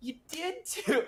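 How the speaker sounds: put-on very high, childish six-year-old squabbling voice. Retelling another speaker's reply: imitating a six-year-old arguing. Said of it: "like, a six-year-old would say in an argument".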